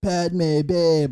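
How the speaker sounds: full beach bum surfer-dude voice. Imitating Anakin talking to Padme in Episode three: Anakin as surfer guy. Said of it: "Just go for it, surfer guy".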